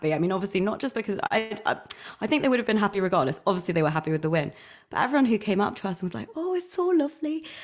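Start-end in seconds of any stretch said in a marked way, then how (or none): 6.3-7.4 very high, clumsy put-on Welsh accent. Quoting the welsh fans who came up to them, in an attempted welsh accent. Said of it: "I was trying to do my best. A Welsh accent".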